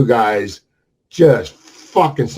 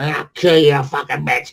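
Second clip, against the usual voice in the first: light, mild mock screaming, pitched up; 5 semitones higher than usual. Retelling a neighbor's fight, imitating Bridget screaming threats. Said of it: "She talks like this".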